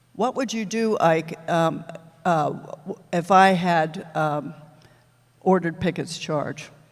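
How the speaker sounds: plain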